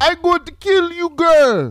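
fake Jamaican accent, very high and loud. Retelling what a man said in a story, speaker uses a put-on Jamaican accent. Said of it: "That's my Jamaican voice".

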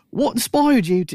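very high, attempted put-on Australian accent. Retelling radio hosts interviewing a hired voice actress, attempted Australian accent. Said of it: "I can't do an Australian".

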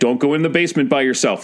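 ordinary talk

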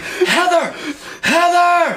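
very high-pitched hollering yell. Telling a story, the speaker re-enacts yelling for a woman: retelling yelling a name. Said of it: "I'm just yelling at her".

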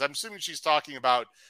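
ordinary delivery

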